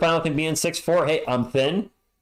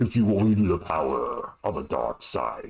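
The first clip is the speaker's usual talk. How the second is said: very deep, threatening villain voice; 11 semitones lower than usual. After calling himself more of a Darth Vader guy, doing a Darth Vader voice. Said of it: "I'm more of a Darth Vader guy, voice wise".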